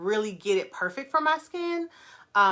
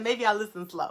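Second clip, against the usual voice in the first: ordinary delivery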